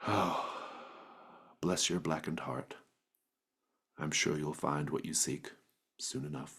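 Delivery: very quiet, hushed, barely heard soft voice. Voicing a figure who stops by a body: saying very quietly. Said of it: "you can hear him say very quietly".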